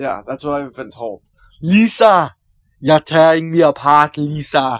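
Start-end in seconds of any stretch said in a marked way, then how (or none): 1.6-4.8 very loud, slow, drawn-out, booming belted delivery. Quoting a line from The Room: The Room impression. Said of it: "good impression".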